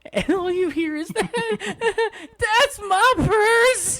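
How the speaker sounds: put-on furious voice. Retelling how a man got so mad about a purse, imitating a high-pitched mad voice. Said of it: "he got so high pitched with his voice".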